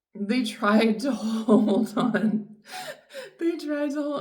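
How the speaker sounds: talking through laughter. Telling a listener about someone who walked away: laughing while talking. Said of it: "I'm laughing because".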